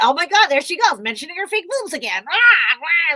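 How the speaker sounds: loud, high, mock scoffing, annoyed, mad jeer. Imitating online haters complaining about her posts: imitating mad haters. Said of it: "They get all, like, mad about it".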